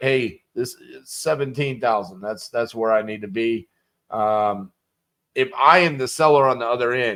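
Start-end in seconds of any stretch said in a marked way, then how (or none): none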